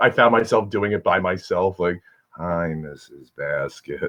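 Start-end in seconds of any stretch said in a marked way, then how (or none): 2.4-4.1 very quiet, low, flat, dull deadpan monotone. Describing an actress from a show, imitating a very dull voice. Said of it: "she has a very dull voice".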